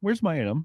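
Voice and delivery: guileless, innocent, genuinely curious wondering tone. Showing how one buyer might mean the message: imitating an innocent, curious question. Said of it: "one person's just like".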